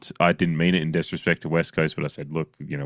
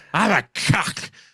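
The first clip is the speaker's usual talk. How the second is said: put-on drunk voice, pitched higher. Retelling a Crazy Stupid Love bar scene: drunk Steve Carell voice. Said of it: "Steve Carell's drunk at the bar".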